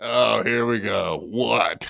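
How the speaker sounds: put-on mocking voice. Mimicking Godfrey's reply from the call just played: imitating Godfrey's reply. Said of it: "that's Chad Zumach's bestest friend in the world".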